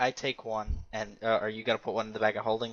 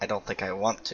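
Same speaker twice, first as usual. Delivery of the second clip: muttered under breath; 3 semitones lower than usual. Replying in character to another player's remark: muttered under breath. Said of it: "under my breath".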